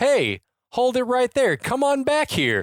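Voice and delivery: bemused, comically puzzled cop voice, very high pitch. Retelling a movie scene, quoting a voice from a helicopter: imitating a comically puzzled voice. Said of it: "the comically puzzled voice from the helicopter says".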